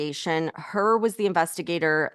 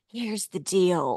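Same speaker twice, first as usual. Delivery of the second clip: put-on hushed whisper. Mocking the president's habit, imitating Joe Biden's whisper. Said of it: "whenever he does that whisper".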